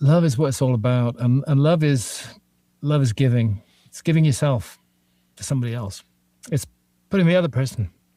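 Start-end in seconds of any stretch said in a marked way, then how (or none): 1.5-7.9 choking up, voice breaking, on the verge of tears. Speaking about love and giving to others, choking up, close to crying. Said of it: "I'm gonna end up crying".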